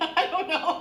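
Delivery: laughing, voice jumping high.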